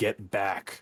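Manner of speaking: somewhat harsh, stern delivery. Voicing two rifle-bearing guards as intruders push through the doors, fairly harsh tone. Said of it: "in a fairly harsh tone".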